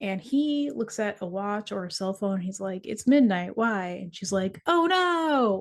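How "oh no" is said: very high, lively, energetic inflection, no drawn out. Acting out a woman's reply in a scene being described, with energetic inflection. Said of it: "I gave a lot more energy to my inflection there".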